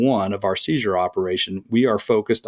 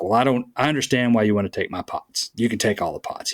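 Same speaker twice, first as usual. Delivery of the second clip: put-on angry male voice. Retelling an angry man's reply during a seizure: imitating an angry man. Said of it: "he just was angry".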